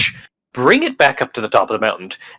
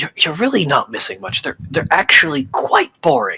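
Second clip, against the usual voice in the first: higher-pitched whisper; 5 semitones higher than usual. Whispering to Frift in character while trying to hide it from Shigure: whispering. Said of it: "I'm gonna whisper to Frift".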